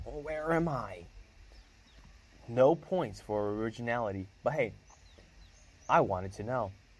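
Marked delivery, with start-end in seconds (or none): 0.0-1.0 rough, hoarse, pitched-up croak, voice barely working. The narrator voices the first-person character's first words to a silent girl, croaked. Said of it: "croaked out".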